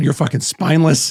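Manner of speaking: normal talking voice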